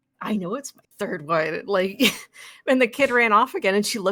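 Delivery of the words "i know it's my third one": mock sheepish, flustered, embarrassed tone. Retelling what a mom said to them after her kid ran off, imitating an embarrassed mom. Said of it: "she got like so embarrassed".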